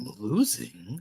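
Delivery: low growling, snarling voice. Repeating the game master's words in character: growling voice. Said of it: "I don't like that growl your voice got".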